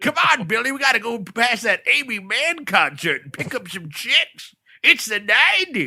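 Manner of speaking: pitched way up, cartoon-style voice. Picturing the cab talking like the one in Roger Rabbit: Roger Rabbit cab voice. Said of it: "And he talked like this".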